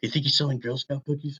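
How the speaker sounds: very quiet, hushed half-whisper. Half-whispering in character over to another party member: half-whispering in character. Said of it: "I whisper over to Sam".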